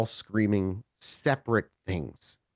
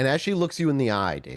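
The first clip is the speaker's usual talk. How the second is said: ordinary talk, nothing marked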